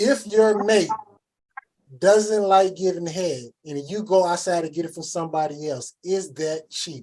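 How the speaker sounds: very slow, deliberate, drawn-out, word by word. A speaker poses a tricky question to the group: said real slow. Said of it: "I'm gonna have to say it real slow".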